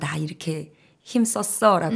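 normal talking voice

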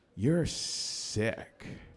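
muttered under the breath. Retelling what the other person said while walking away: imitating a mutter under the breath. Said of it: "under his breath in my direction".

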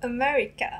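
Japanese accent and pronunciation. Pronouncing an English word the way Japanese speakers would: Japanese pronunciation. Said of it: "Pronounce America in a Japanese way".

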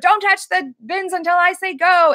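loud shouting. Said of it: "they yell at her".

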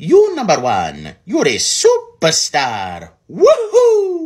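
very high swooping cartoon voice, woohoo stretched, loud, slow. Thanking Charles Martinet in a tribute, Mario voice. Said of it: "I will do my Mario voice".

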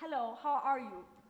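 loud, garbled, words mangled as if tongue swallowed. A character describes a cousin, imitating a cousin who swallowed his tongue. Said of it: "He talked like this".

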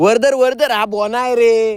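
loud, high-pitched voice calling out.

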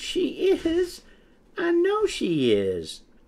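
anxious chick peeping, very high and very slow. A young chick speaks up, peeping anxiously. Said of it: "Peck anxiously peeped".

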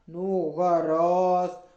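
low, loud, grudging grumble. Narrator reads the raven answering the pleading fairies, grumbling. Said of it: "пробурчав ворон".

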